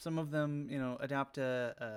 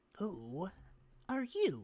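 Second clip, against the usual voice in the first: high, swooping, creaturely goblin character voice; 6 semitones higher than usual. Voicing a goblin who walks over to the party: voicing a goblin. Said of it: "a couple of them, like, make their way over to you".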